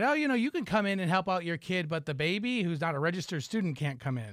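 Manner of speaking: ordinary talk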